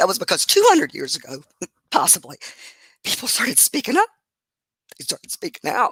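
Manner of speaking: emotional, halting voice catching mid-phrase. Speaker discussing women gaining the right to vote, getting emotional. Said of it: "sorry I get emotional".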